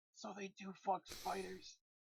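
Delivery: hushed, breathy whisper in a put-on voice. Moving closer to a dwarf companion and whispering to him: whispering in character. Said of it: "Whisper to him".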